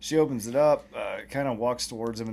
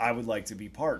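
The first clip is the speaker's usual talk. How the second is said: plain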